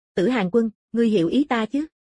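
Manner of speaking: ordinary delivery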